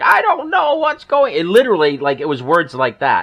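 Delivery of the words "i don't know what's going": very high put-on old man voice. Reading out an old guy's email message in a put-on old man's voice. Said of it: "this was like an old guy. ... I'm doing the voice".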